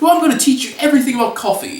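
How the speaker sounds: put-on very high pitched voice with British accent. Retelling a vision in which a coffee expert visits: James Hoffmann British voice. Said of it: "He comes to me in his British voice".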